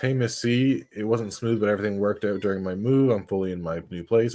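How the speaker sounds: usual speaking voice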